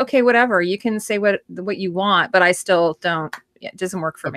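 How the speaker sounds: usual speaking voice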